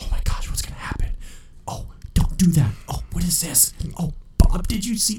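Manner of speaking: nonstop, breathy whispered commentary under the breath. Retelling an older woman in a movie theater: imitating a woman whispering. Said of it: "whispering the whole time".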